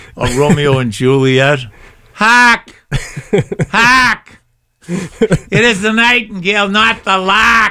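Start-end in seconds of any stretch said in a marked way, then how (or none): 2.1-7.7 put-on very high-pitched, slow, declaiming Boston accent. Retelling playing Macbeth on stage: imitating own past Boston accent. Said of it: "So I had that Boston accent".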